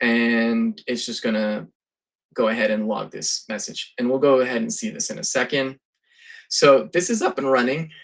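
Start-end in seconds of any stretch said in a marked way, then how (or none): 6.5-7.9 voice cracking and breaking. A presenter demoing software running in a terminal, voice cracking. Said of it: "My voice just cracked".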